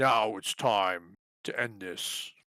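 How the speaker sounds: deep voice, low, slow, each word deliberate. Voicing Priam as he leaps at Sky Yeller: deep voice. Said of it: "in a deep voice".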